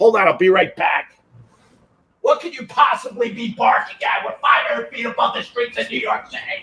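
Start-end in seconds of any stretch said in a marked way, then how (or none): 2.2-6.6 half-hearted, mild, theatrical fake yell. The speaker breaks off mid-discussion to address the barking dog, fake yelling. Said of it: "this is fake yelling".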